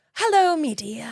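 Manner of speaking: put-on old man leprechaun voice. Retelling how a man answered the phone when called about a snake, old Englishman crossed with leprechaun. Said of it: "kind of like a cross between a leprechaun".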